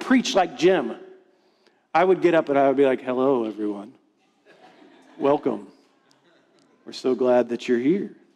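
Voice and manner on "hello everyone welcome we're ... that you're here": very low, deep public-radio announcer voice. Retelling trying to preach like a former pastor, doing an NPR radio voice. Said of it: "I was trying to do the NPR voice".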